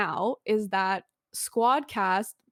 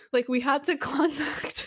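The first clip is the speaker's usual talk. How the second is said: words breaking up with laughter; 4 semitones higher than usual. Telling a story to the other speakers, laughing while talking. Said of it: "I'm sorry, I'm laughing".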